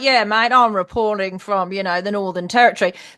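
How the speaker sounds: relaxed, casual, natural-sounding reporter delivery. Describing how male reporters sound on camera, imitating a male reporter. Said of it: "They sound like human beings".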